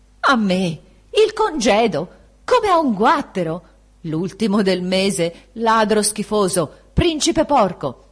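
loud yell in a broken, cracking voice. Signor Marco, having torn the letter, shouts at Baldassarre in a broken voice. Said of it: "l'altro gridò con voce rotta".

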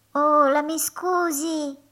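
tiny hollow voice, soft and high. Narrator reads the line of an unseen speaker who suddenly interrupts: small cavernous voice. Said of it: "una vocina cavernosa".

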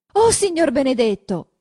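high, startled crying out. A woman turns at a noise, looks closer, and cries out. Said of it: "Guarda più attenta e grida".

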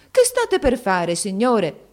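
crying out. Narrator reads a mother holding back the vizier by the arm, exclaiming. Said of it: "esclamò".

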